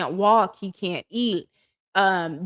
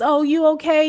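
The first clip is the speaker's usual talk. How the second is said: put-on, phony concern, pitched up; 7 semitones higher, 4 dB louder than usual. Retelling how a mom asked a question: imitating fake concern. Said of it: "this fake ass".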